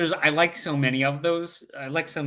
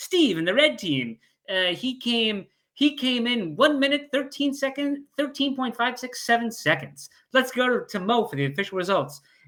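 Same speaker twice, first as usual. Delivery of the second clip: botched, pitched-up attempt at an English accent; 8 semitones higher than usual. Acting out how they would announce the result, in an attempted English accent. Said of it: "I'm trying to do an English accent".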